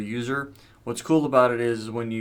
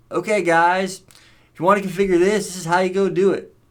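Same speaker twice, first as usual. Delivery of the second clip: really bad put-on Texas accent, loud and high; 8 semitones higher, 8 dB louder than usual. Imitating a tutorial presenter walking viewers through configuration, in a really bad Texas accent. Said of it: "My really bad Texas accent".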